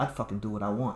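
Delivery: put-on cocky, defiant punk voice. Retelling how a guy answered back to the speaker's dad: mock-cocky punk retort. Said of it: "Like being a punk".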